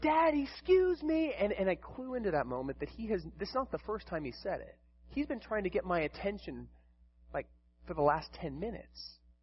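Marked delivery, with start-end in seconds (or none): 0.0-1.3 put-on shrill, high, loud little boy yelling. Father recalling Ethan trying to get his attention: imitating a child yelling. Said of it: "And he's like yelling".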